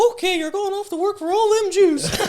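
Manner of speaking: very high, squeaky voice. Retelling what Walt Disney told a departing animator, in the Mickey Mouse voice. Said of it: "in the Mickey Mouse voice".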